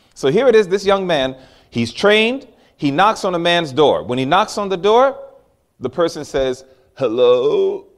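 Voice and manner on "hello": low, congested, stuffed-up, blocked-nose voice. Speaker retelling a man answering his door, imitating a stuffy voice. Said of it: "he has a stuffy sound in his voice".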